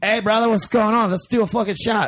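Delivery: wonky put-on Australian accent. Retelling meeting Pete Moylan and what he said: weird Australian accent as Pete Moylan. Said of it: "That's the weirdest Australian accent ever".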